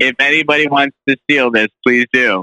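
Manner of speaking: usual speaking voice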